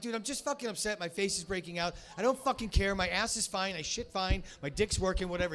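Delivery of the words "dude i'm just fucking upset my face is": plain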